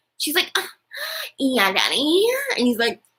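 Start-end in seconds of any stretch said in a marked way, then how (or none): 0.6-2.3 over-the-top, swooping, sing-song sexy bedroom moan. Mocking how a couple sound during sex, imitating the woman. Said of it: "this is how it sounds when they have sex".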